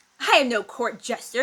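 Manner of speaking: with a sneer. Reading a story aloud, voicing the lord's reply, sneering. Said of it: "he sneered".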